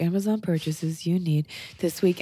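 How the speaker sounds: mocking, gentle, soft-spoken voice. Imitating a TikTok girl listing Amazon purchases: imitating a soft beta voice. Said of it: "a soft beta voice".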